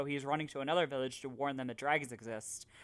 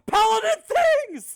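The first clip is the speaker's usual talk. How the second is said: shrill, very high, very loud, full-throated shout; 16 dB louder than usual. Retelling what was said during a combat attack: retelling own yell. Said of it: "So I just yelled".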